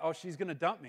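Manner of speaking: plain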